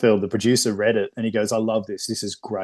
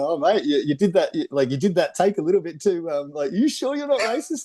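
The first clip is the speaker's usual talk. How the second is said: good-natured playful teasing, pitched up and swooping; 7 semitones higher than usual. Retelling an actor teasing a co-star after a take: imitating playful teasing. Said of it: "he's just giving him shit".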